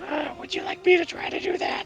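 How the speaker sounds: light character voice. Narrating the scene, the storyteller voices someone in the shadows in a light voice. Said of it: "you hear this light voice that goes".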